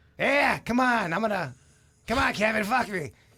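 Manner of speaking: thick, laid-on, put-on New England accent. Comparing accents as role play: hardcore New England accent. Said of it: "a hardcore New England".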